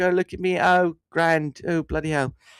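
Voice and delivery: put-on English bloke accent. Mocking a lazy impression versus real emulation: stereotypical english bloke accent. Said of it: "I'm some English bloke".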